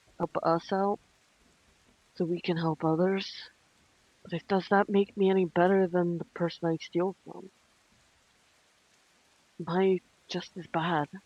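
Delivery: whispered character voice. Voicing a character confiding doubts about stealing: whispering in character. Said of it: "she's whispering this next bit".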